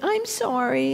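acted small pathetic voice. Retelling how he apologized when being yelled at, imitating a little pathetic voice. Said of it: "in this little pathetic voice".

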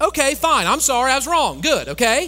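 very high, very loud, shrill, resentful, grudging tone. Showing an apology said with an attitude: grudging, insincere apology. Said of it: "you just can say it with an attitude like".

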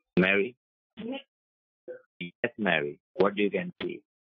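voice suddenly transformed, deep, swooping, hellish. Calling out to Jeff and Mary, voice suddenly much lower. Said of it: "What happened to your voice?".

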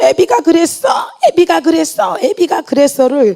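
high, broken, anguished crying scream. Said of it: "절규하듯이".

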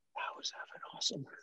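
very quiet, close, breathy whisper. Retelling words said into someone's ear during a hug: imitating a whisper. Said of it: "And I whispered into his ear".

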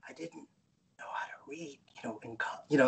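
whispered speech. Speaker retells what a man whispered to him in a restaurant, retelling a whisper. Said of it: "he whispered to me".

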